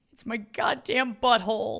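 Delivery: acted, loud, high sobbing, crying wail. Describing a sketch about a man at the dinner table with his family, imitating a man crying. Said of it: "then he starts crying and he's like".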